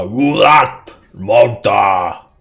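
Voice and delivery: loud, slow yell in giant voice. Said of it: "they're just basically yelling out".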